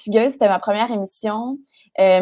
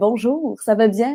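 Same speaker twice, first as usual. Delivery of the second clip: little proper polite put-on voice, slow. Demonstrating the voice used when ordering at restaurants or phoning, a little proper voice. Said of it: "je vais prendre cette petite voix-là".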